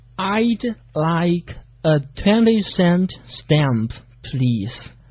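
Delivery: very slow, careful, clearly enunciated speech. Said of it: "这该怎么说呢".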